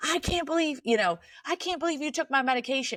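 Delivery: enraged, furious, high-pitched screaming. Retelling how mom screamed at dad: imitating a furious scream. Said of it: "furious and, like, screaming at him".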